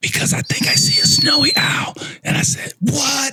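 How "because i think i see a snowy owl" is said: quiet, hushed, secretive whisper. Retelling being woken up, the speaker quotes their mom, imitating mom's whisper. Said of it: "why are you whispering?".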